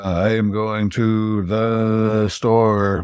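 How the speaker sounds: flat, very slow, drawn-out droning machine voice. Showing how the Cyberman talks: Cyberman voice, monotone, drawn out. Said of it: "this Cyberman has sort of a monotone, slightly sing-songy".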